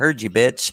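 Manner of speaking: mock very low, deep, grinning teasing tone. Quoting the husband's comeback after he overheard, retelling a grinning tease. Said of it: "grinning at me like".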